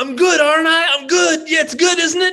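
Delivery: very high, loud, boastful crowing. Answering what Billy said in the scene: imitating Billy bragging. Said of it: "what was he saying again?".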